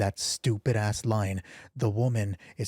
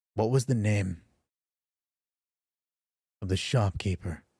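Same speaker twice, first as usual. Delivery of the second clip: deeper, gruff, roughened, lowered voice. During a dice game, [name] turns to Bree with a question: deeper, gruffer voice. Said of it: "asks with a deeper, gruffer voice".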